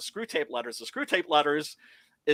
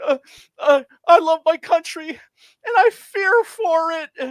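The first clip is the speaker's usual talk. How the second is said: very high, shrill, loud, booming sobbing wail; 14 semitones higher, 10 dB louder than usual. Imitating him crying on the Fox News Channel: imitating someone crying. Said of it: "literally crying, going".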